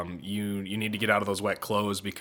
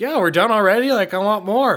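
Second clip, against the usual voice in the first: very high, very loud, playful teasing tone; 12 semitones higher, 12 dB louder than usual. Speaker retells joking at the race finish, mock-joking tone. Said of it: "Just jokingly like".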